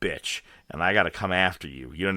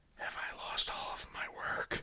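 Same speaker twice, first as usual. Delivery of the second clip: breathy, hushed whisper, very close. Retelling asking the test lady about lost work: retelling a whisper. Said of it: "just whisper into this old lady's ear".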